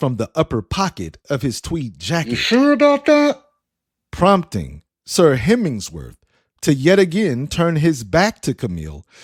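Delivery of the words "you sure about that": muffled, very high-pitched sarcastic jab. A voice from Sir Hemmingsworth's jacket pocket answering him, muffled, sarcastic voice. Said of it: "With a muffled voice sarcastically asking".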